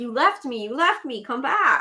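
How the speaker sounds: loud, high, drawn-out meowing voice. Joking that the cat felt left behind: voicing the cat. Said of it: "She's like".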